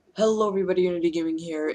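rapid-fire delivery. Opening a gaming video by greeting everybody, very fast. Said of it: "I said that really fast".

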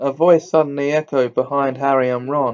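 ordinary delivery, nothing marked

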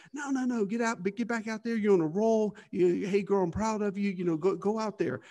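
put-on encouraging tone. Retelling his dad's reply to a woman at the car, mock-encouraging. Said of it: "in the most encouraging way".

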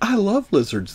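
high, slow, coy delivery. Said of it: "so coyly said".

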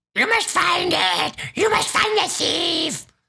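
very high, buzzing, pleading, panicked rasping cry. Narrator reads an unseen speaker's tirade, rasping, panicked cry. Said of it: "A rasping, panicked voice cried out".

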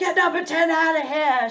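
loud angry shouting. Retelling what the other parents yelled at the game: imitating adults yelling. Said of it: "Adults yelling at".

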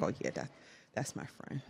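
very low, soft, breathless under-the-breath whisper. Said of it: "So I'm like".

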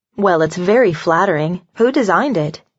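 plain reading voice

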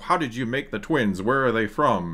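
ordinary delivery

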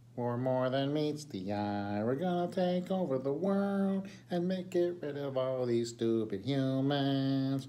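mechanical robot voice, "humans" drawn out. Wearing a robot t-shirt, the speaker jokingly talks like a robot: robot voice. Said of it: "I think where they all talk like this".

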